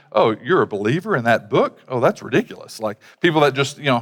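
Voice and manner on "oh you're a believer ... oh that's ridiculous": scoffing, derisive ridicule through a laugh. Describing how some people react to believers, imitating someone laughing mockingly. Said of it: "laughing mockingly going".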